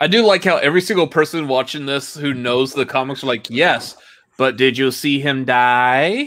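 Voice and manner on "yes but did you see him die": very slow, drawn-out delivery leaning on die. Imitating comics fans, in a Hangover actor impression. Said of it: "You can't do that voice".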